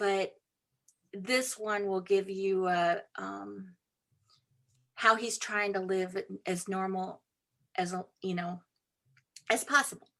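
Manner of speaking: choked-up voice catching with emotion. Parent talking about their own child in a book, choked up. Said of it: "I get choked up every time I talk about my own child".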